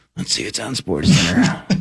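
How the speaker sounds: mock dramatic aside-like voice. Imitating a co-host's dramatic turn toward the tv: imitating a dramatic aside. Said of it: "you do a dramatic, slow turn".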